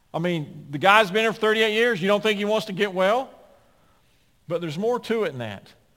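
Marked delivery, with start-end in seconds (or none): 0.1-3.3 high, loud, snarky, sarcastic tone. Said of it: "if we were really snarky and sarcastic".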